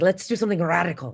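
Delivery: put-on German-accented voice. Quoting the director, Anna Forrester, imitating Anna Forrester's German accent. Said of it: "she has this great German accent".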